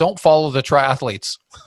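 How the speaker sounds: imitated flat, deadpan delivery. Retelling a man's answer into a race microphone, mimicking a deadpan line. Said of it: "he looked at me deadpan and he said".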